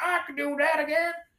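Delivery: mock angry Texan voice. Picturing how hardcore conservatives in texas react to the news: imitating hardcore texas conservatives. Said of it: "the hardcore conservatives are like".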